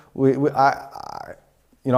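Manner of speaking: stuttering. Educator telling fellow educators about their spoken language, stuttering. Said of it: "I'm stuttering here".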